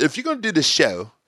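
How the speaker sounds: put-on British accent. The speaker retells a man's challenge about the show, imitating his British accent. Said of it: "in his British accent".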